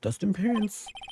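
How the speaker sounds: ordinary delivery, nothing marked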